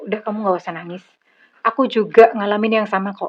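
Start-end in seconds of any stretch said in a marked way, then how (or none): none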